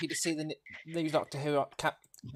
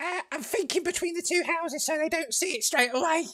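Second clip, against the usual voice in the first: squeaky, very high-pitched put-on goblin voice; 12 semitones higher than usual. Planning where to place artillery in a game: goblin voice. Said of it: "This is my goblin voice".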